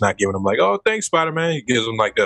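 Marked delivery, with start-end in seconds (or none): 0.6-1.5 earnest, heartfelt, sincere, pitched up. Retelling a game clip, the thanks the owner does not give: imitating a genuine thank-you. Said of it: "being an asshole about it".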